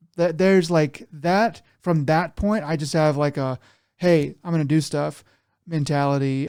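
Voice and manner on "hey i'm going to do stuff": ordinary delivery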